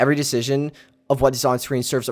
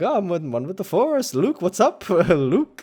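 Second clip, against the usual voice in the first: breezy, jovial, high, unhurried, drawn-out cheerful voice; 6 semitones higher than usual. Describing the later Obi-Wan in episode four: jovial Obi-Wan voice. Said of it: "jovial and kinda, like, happy-go-lucky".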